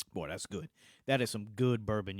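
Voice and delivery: deep voice, rattled off fast. Praising the bourbon just tasted, noting the change: deeper voice. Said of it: "You hear how much deeper my voice got".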